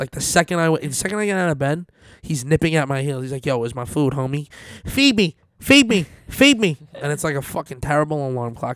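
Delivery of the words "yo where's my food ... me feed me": invented cat voice. Describing a pet that pesters for food each morning, voicing a pet. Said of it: "everyone makes voices for pets".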